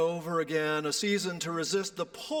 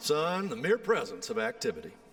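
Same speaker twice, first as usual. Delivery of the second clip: heavy Tennessee twang, laid on thick. Repeating a grandfather's wise saying, heavy Tennessee accent. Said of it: "It's better with a heavy Tennessee accent".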